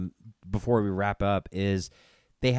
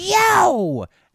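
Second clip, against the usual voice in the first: very high, loud, belted, long drawn-out yo; 8 dB louder than usual. Retelling an autograph signing, imitating a toad voice. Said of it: "she did the fucking toad voice".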